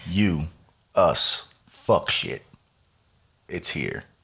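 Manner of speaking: deep, dramatic, epic movie trailer narrator voice. Hyping a weekly three-hour get-together with a co-host, dramatic movie trailer voice. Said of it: "That sounds like a movie trailer".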